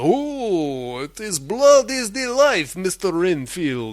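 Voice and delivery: "oh" said slowly and stretched out. Retelling a scene where Dracula sees blood: Dracula voice. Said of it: "and then Dracula".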